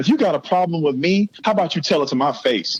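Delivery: mock furious unhinged scream, losing it. Telling a story about scolding housemates, recounting how the outburst went, retelling a furious scream. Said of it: "I shut it off and I'm screaming".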